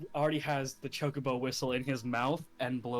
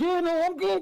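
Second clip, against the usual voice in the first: smothered, muffled voice, higher and louder; 9 dB louder than usual. Voicing a character pinned under a heavy chocobo: muffled. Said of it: "gives the most muffled".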